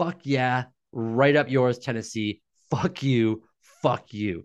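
pumped-up, jeering, gloating taunting tone. Retelling a center walking off the field after a win: imitating Karras yelling at fans. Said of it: "yells at the Titans fans".

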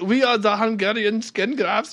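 put-on German accent. Pretending to be a Viking punk band introducing itself: put-on German accent. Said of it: "I don't know why we speak with German accents".

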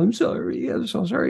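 sweet, high, cooing voice.

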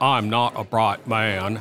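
very slow, drawn-out character voice, word by word. Delivering a line while planning a story, in a Forrest Gump voice. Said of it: "I have to say that in my Forrest Gump voice".

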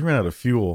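plain

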